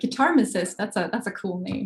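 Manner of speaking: normal talking voice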